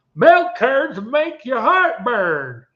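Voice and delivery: put-on southern drawl, pitched way up, slow sing-song. Quoting a strange cheese label's slogan, in an imagined southern accent. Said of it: "in what I imagine to be a southern accent".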